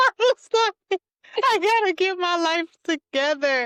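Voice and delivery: panicked, high exclamation.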